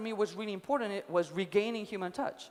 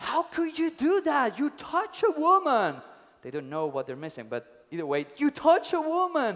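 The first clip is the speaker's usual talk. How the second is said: play-acted angry, exasperated outburst, high and swooping; 5 semitones higher, 4 dB louder than usual. Retelling a story where the younger monk yells at the old monk; retelling an angry yell. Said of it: "he starts yelling at him".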